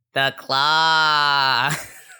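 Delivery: put-on alien voice with the word "claw" drawn out. Doing the claw bit for a phone text tone in a put-on alien voice. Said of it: "doing the claw in the alien voice".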